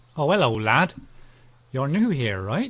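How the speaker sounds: bad, loud, put-on rustic country farmer accent. Playing a game, voicing a farmer character in a bad farmer accent. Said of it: "That's my kind of farming accent".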